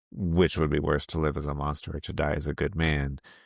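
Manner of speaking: normal talking voice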